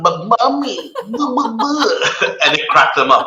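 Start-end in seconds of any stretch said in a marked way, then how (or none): 0.0-0.9 put-on very high, babyish little voice, baby talk. Retelling joking with girls by pretending to be a baby, in baby talk. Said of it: "quote unquote baby talk".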